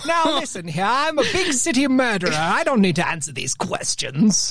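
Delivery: put-on Mid-Atlantic accented speech. Playing an Imperial City murderer: Mid-Atlantic accent. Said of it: "murderers talk".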